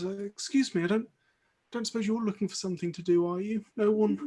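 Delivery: soft, teary, weepy voice. Voicing a cloaked figure who was crying in the corner, approaching you: tearful. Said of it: "wiping the tears from her eyes".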